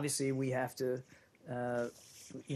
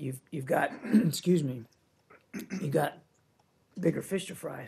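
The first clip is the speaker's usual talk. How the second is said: hoarse, fading voice, louder; 4 dB louder than usual.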